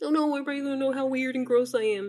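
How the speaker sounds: high, whiny, blubbering fake sobbing. Mocking caught men who cry when exposed: mock crying. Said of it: "That's why they be crying".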